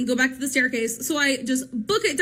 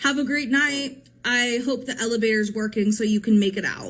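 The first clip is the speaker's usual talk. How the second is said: mock grave, dead-earnest, very serious, low delivery; 4 semitones lower than usual. Retelling the date's parting words: imitating a man speaking very seriously. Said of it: "very serious again and goes".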